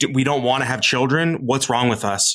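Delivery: ordinary delivery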